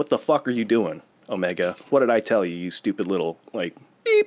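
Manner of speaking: play-acted, furious, scolding outburst. Retelling how Hunter scolds Omega: imitating someone going off angrily. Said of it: "he kinda goes off on her".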